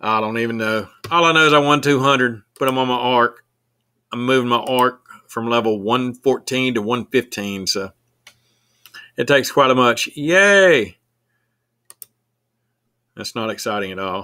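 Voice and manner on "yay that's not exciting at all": sarcastic, ironic mock cheer. A streamer comments on leveling up an arc, sarcastic yay. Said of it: "That was a sarcastic yay".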